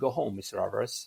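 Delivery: steady, firm, no-nonsense, final tone. Retelling being told to go home after class: imitating a firm voice. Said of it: "He looked at me with a firm voice".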